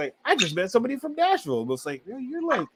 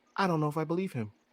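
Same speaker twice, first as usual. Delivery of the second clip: soft, hushed, confiding stage half-whisper; 6 dB quieter than usual. Retelling a remark made to a friend outside the venue: retelling a half-whisper. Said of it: "whisper to him".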